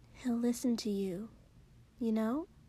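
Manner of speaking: soft, hushed, gently spoken words. Narrator voicing a friend advising a companion: soft. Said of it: "Mina said softly".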